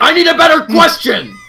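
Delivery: mock very high-pitched, shrill, loud yelling. Retelling yelling at a grocery clerk: imitating own yelling. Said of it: "I just started yelling".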